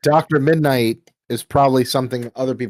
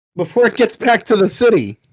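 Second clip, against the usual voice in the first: calling out loudly, higher and louder; 9 semitones higher, 4 dB louder than usual. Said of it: "yell out to".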